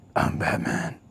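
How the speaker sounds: very quiet, breathy, whispered hero voice. Speaker warning viewers about a Bat Cave visit, doing a Batman voice. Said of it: "I will be talking like this".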